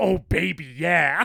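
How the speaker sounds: very loud, gleeful, drooling eagerness. Retelling a movie scene, imitating Hernandez salivating eagerly. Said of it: "salivating at the thought of".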